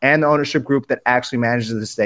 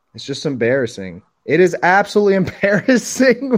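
speech breaking into laughter while talking; 4 semitones higher than usual. Talking with others about fans throwing trash: laughing while talking. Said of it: "I can't stop laughing".

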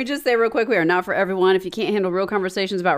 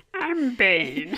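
silly puppet character voice; 4 dB quieter than usual. Wanting to talk like Bane, the speaker ends up in a Grover voice. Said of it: "I did that in like a Grover voice".

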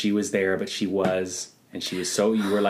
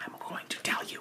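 put-on bared-teeth voice, much quieter. Showing off an impression to someone, in a Haley Joel Osment voice through bared teeth. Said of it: "Because he bares his teeth".

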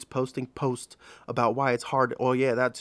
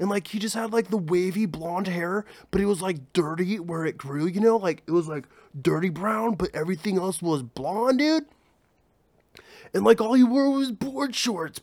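high, typical California surfer dude voice; 7 semitones higher than usual. Describing a typical surfer dude met in california, surfer dude voice. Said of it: "And he talked like this".

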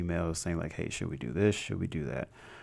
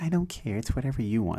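mocking, high-pitched put-on women's voice; 5 semitones higher, 4 dB louder than usual. Speaker mimics how the ladies he addresses sound, in a mocking imitation of them. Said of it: "You know that's what you sound like".

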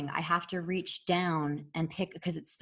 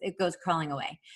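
normal talking voice

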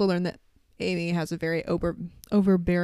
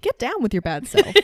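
stiff, mechanical, robot-like delivery, a bit high; 5 semitones higher, 4 dB louder than usual. Recapping a scene, quoting Buffy after learning about mom's cheerleading, in Buffy's robotic line delivery. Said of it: "in just the most robotic voice".

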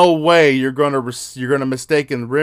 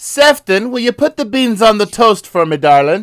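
fake British accent, high and raised; 8 semitones higher, 5 dB louder than usual. Joking about a British-sounding name, a speaker plays along in a mock British accent. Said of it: "You do it so much better".

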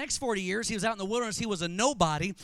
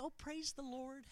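hushed, very quiet, dramatic prayer voice; 7 semitones lower than usual. Speaker mimics how some people talk when they pray, imitating a praying voice. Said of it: "but when they pray".

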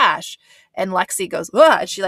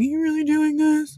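high, pitched-up yell, thrown hard; 8 semitones higher than usual. Describing a man yelling at a woman who is leaving; retelling a yell. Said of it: "So he's yelling".

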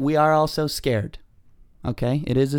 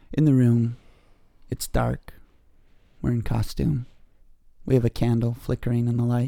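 public radio host voice; 3 semitones lower than usual. Setting the scene for a costumed podcast by candlelight, sounding a little NPR. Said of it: "You're sounding a little NPR there".

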